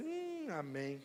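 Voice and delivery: very low, limp, faded amém with no energy. Imitating a weakened response just heard: weak, faded amém. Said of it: "Deu uma enfraquecida no amém agora, hein? Eu senti que esse amém foi meio assim".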